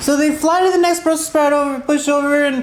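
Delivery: plain reading voice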